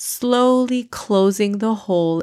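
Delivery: ordinary delivery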